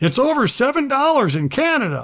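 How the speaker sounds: very loud and very high-pitched. Retelling what a fellow at a convenience store said: imitating someone saying it loudly. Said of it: "very loudly says".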